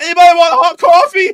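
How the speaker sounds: crazed hollering, very high, loud and shrill. Retelling a video of a prank at a gas station: imitating someone yelling. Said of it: "he was yelling".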